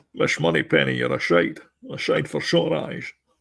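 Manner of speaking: rough, high, creaky film-spy voice. Joking about auditioning for a Bond remake: James Bond voice. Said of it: "that's your audition tape".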